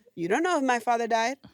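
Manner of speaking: particular tune with a questioning intonation. Retelling a waitress's reply in a quarrel, imitating the waitress's intonation. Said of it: "it was that intonation too".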